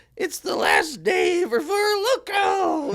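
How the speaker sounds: very high, very slow, swooping hyped-up cheering drawl. Speaker retells a woman approaching them, imitating her all-hype delivery. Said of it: "it was like all hype".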